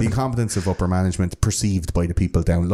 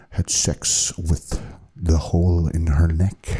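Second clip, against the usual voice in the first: mock creepily calm, menacing tone; 2 semitones lower than usual. Retelling how the killer described his crime: imitating a creepily calm killer. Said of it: "creepily calm while describing".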